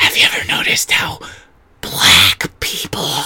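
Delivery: put-on drunken stage whisper. Retelling a comic's bit about a drunk mom: imitating a drunk mom's loud whisper. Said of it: "she thinks she's just mouthing the words".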